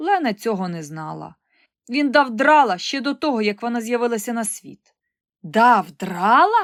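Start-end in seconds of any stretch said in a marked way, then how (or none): 5.4-6.6 loud, aghast, appalled, horrified voice. Reading a character's reply in a story, horrified question. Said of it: "нажахано спитав".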